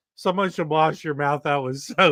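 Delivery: plain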